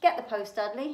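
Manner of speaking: ordinary delivery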